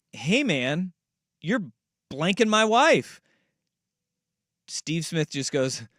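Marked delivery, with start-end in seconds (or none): 0.2-3.2 eerily calm, relaxed, casual, matter-of-fact delivery. Retelling a husband's phone call to the man involved: imitating an almost too calm caller. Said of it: "almost too calmly being like".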